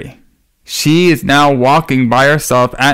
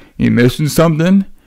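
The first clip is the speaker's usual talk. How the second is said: creepy voice, sprung suddenly without warning. Retelling a movie scene where a character pops out: imitating a creepy character. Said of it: "he's so creepy during this".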